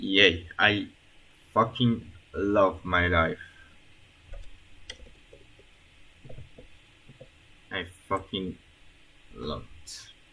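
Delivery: heavily sarcastic, feigned delight. Starting another coding task, calling it a joy: sarcastic. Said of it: "I was being sarcastic".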